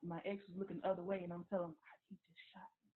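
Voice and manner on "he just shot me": whispered, very quiet, hushed. Retelling whispering to the cousin while the ex looked away: retelling a whisper. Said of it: "I'm whispering to him".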